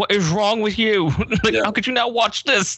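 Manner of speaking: put-on British accent. Imitating viewers' reactions after the episode: put-on British voice. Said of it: "just British voice".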